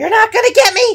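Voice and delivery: crazed, taunting shriek, very high and very loud. Voicing someone calling from across the way: crazed voice. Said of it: "you are surprised by this crazed voice".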